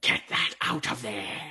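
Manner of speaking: ghostly, ghastly, reverberating spirit voice. As game master, voicing what the players hear in a ghastly voice. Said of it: "you hear a ghastly voice go".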